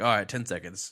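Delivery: ordinary delivery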